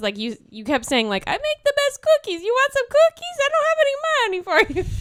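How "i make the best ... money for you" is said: put-on Italian baker voice, loud and very high. Retelling someone's bit of talking as if to a mob boss, Italian baker accent. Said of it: "pretending that that he's an Italian baker".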